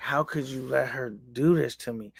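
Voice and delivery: acted mad outburst. Retelling a fight, quoting her blaming her boyfriend: imitating someone angry. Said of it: "she was mad at her boyfriend".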